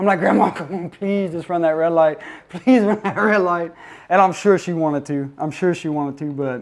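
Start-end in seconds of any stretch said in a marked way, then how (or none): none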